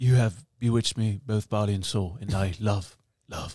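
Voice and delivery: put-on British accent delivered in a romantic tone. Asked to say it the way he once said it to her, quote Mr. Darcy in accent. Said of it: "In accent".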